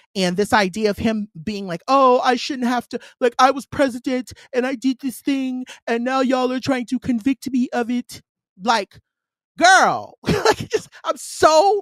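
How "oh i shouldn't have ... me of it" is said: put-on French-sounding accent. Acting out a former president's attitude for a listener, use a French-sounding put-on voice. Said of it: "Why you sound French though?".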